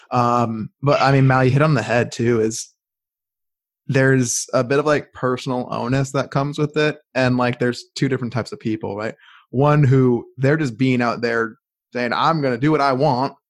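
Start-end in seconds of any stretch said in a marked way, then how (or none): 12.1-13.3 put-on Southern American accent. Describing one type of person, the speaker voices their attitude; Southern American accent. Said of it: "I don't know why I went with a Southern America accent".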